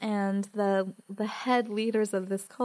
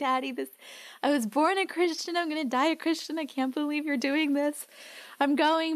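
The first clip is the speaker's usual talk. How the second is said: put-on tearful pleading, words spilling out; 6 semitones higher than usual. Retelling what she said to her father before entering: retelling tearful words. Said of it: "I burst into tears, like".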